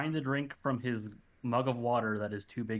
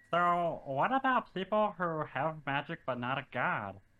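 little, high-pitched kobold voice; 6 semitones higher than usual. In a tabletop game, the player voices Hedwig asking a question, in Hedwig voice. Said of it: "So Hedwig is a small 2'8" kobold".

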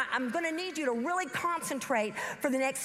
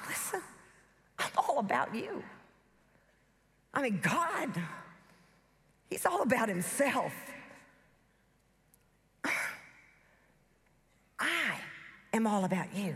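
sly, lowered voice; 4 semitones lower than usual. Preaching on how Satan deceives, voicing him: sly Satan voice. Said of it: "this is Satan on the sly".

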